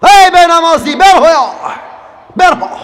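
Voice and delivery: high, loud, furious roaring shout.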